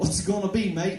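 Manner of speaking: faked, put-on Australian accent. Slipping into a put-on Australian accent while talking about having no bread. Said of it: "I just go into those Australian accents all the time".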